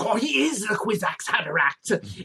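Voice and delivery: very raspy voice. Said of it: "saying things in a super raspy voice".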